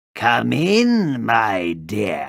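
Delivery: snarling, beastly wolf growl. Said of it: "growled the wolf".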